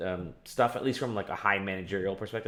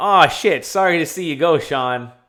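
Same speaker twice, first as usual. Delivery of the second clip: insincere, sarcastic, raised, pitched-up voice; 8 semitones higher, 12 dB louder than usual. Paraphrasing a terse farewell statement: imitating a sarcastic statement. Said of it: "it was very sarcastic".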